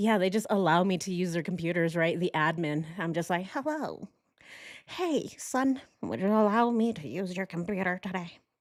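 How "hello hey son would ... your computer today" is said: put-on voice of an elderly woman. Joking they live in an old folks home, asking staff for a computer: mock old lady voice. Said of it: "Alright, old lady".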